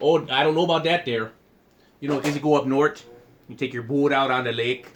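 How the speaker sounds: put-on accent from Wisconsin. Chatting with others who tease it, in a Wisconsin accent. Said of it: "Stop pulling out the Wisconsin accent".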